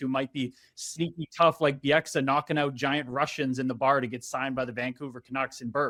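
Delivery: ordinary delivery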